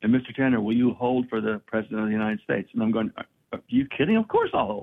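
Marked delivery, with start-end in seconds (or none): none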